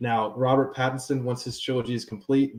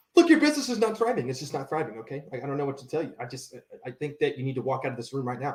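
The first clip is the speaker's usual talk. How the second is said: very fast, energetic, unhesitating rapid-fire delivery. The speaker does an impersonation that is very fast, energetic, without hesitation. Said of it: "Very fast, very energetic, no hesitation".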